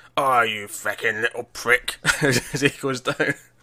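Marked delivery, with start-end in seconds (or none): 0.2-2.0 put-on full, broad Cockney accent. Retelling a dying movie character's last words, as Michael Caine going full Cockney. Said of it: "it goes full Cockney".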